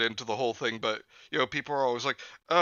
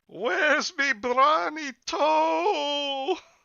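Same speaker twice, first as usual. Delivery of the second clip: very high groaning vampire moan, "toe" stretched; 13 semitones higher than usual. Telling a scary story, the voice in the dark speaks in a groaning vampire voice. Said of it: "Manny's vampire voice is so good".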